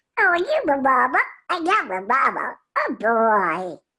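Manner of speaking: put-on little baby duck voice. Voice actor demonstrating his Tom and Jerry role, Little Quacker duck voice. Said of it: "he sounds like this".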